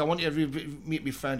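ordinary delivery

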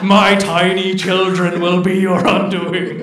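low, deep, rolling monster rumble. Storyteller voicing a captor who threatens the rescuers, deep rumbling voice. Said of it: "Deep rumbling voices".

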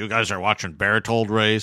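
put-on voice with a Texas accent. Speaker quotes an engineer asking the group a question, imitating a Texas accent. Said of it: "he was from Texas, so he had this great accent".

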